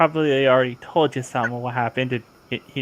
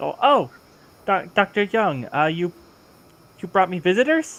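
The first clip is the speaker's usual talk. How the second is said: pitched-up, halting underwater intercom voice; 6 semitones higher than usual. Voicing a researcher in a tank who greets visitors through an intercom: voice over an intercom. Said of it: "through the voices of an intercom".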